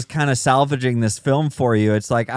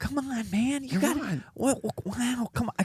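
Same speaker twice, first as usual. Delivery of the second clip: put-on breathy whisper, higher and quieter; 11 semitones higher, 11 dB quieter than usual. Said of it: "except he's not whispering as much".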